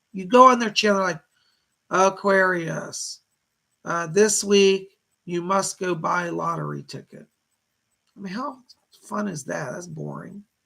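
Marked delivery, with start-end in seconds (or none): 1.9-7.3 slow, flat, droning one-note monotone delivery. Mimicking boring YouTube channels that talk in a monotone: flat monotone. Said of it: "They talk in a monotone".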